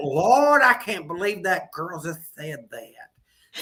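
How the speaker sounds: mock shocked disapproval, slow and scandalized pearl-clutching. The speaker acts out an old-school woman's reaction to her show, mock-scandalized pearl-clutching. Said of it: "she'd be clutching her pearls".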